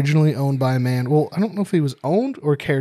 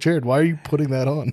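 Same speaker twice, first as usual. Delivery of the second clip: plain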